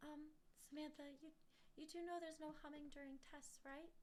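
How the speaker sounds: gentle, hushed, very soft, sweet teacher voice. Retelling a teacher's question during a test: imitating a soft-spoken sweet teacher. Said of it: "very soft-spoken and sweet".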